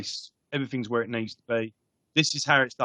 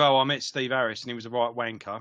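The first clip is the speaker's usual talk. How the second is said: ordinary delivery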